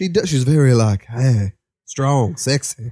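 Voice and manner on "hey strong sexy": star voice, pitch dipping down on every vowel. Doing an impression when asked to, Angela Bassett impression. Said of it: "do an Angela Bassett impression".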